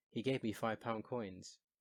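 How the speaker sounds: normal talking voice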